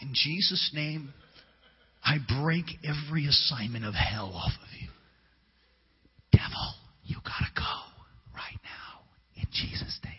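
slow, hushed, drawn-out whisper. Retelling trying a quieter way of praying for deliverance: retelling own whispered prayer. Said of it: "Let's try that again".

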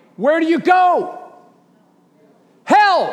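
very high preacher's cry. A preacher asks the listening crowd a question, raised voice. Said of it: "I shouldn't have to raise my voice".

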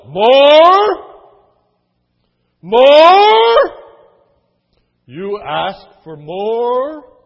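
very loud, very slow, drawn-out outraged bellow. Retelling the orphanage scene, as Mr. Bumble bellowing in outrage at the boy. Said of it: "he bellows".

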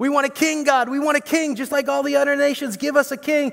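very high, screaming, demanding outcry. Retelling how the people of Israel demanded a king: imitating people screaming out. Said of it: "how they screamed out".

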